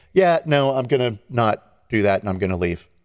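ordinary talk

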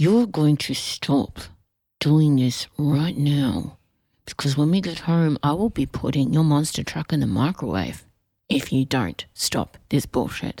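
menacing whisper through teeth. Showing how a parent whispers in a misbehaving child's ear, clenched-teeth whisper. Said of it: "you whisper in the ear".

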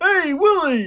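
high, swooping, bouncy sitcom alien puppet voice. Riffing on a show idea, the speaker does an Alf impression. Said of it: "That's my Alf impression".

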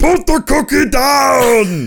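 loud, slow, drawn out, pitch falling downward. Quoting the famous movie line on a packed street: Arnold Schwarzenegger impression. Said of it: "Arnold Schwarzenegger in a packed Minneapolis street goes".

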